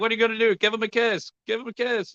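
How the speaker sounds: put-on yelling, heckling, pitched way up. Retelling shouting during a disappointing final match: imitating own past shouting. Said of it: "I was shouting".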